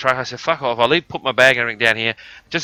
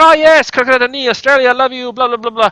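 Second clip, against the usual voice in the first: put-on very high, slight French Canadian accent; 13 semitones higher, 6 dB louder than usual. Retelling a man who suddenly speaks english, slight french canadian accent. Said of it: "with a slight French Canadian accent".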